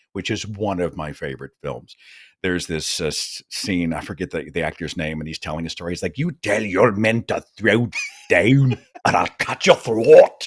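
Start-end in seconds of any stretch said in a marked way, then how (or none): 6.2-10.5 loud, dramatic, movie-style put-on Scottish accent. Recalling a scene from the film Rob Roy, a speaker quotes an actor: imitating a Scottish accent. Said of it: "and this is a Scottish thing".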